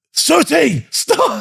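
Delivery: shrill, raspy, very high shouting. Retelling a sergeant major stopping someone at camp: imitating someone yelling. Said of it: "he yelled at you".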